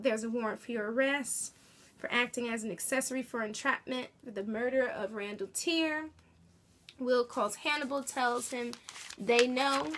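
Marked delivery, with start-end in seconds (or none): none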